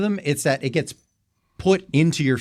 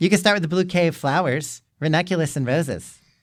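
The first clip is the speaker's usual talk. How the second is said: imitated, mock girlish female voice. Acting out her lines as she sounds in their heads, imitating a girl's voice. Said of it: "how she sounds in our heads".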